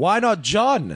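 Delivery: shrill yell pitched very high. Telling a story about a vote, retelling a guy's yell. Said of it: "he yells out".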